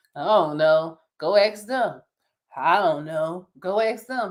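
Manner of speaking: listless, slow, lifeless, zombie-like voice. Imitating a worker who only says go ask them: imitating a zombie-like worker. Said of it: "it was almost like a zombie".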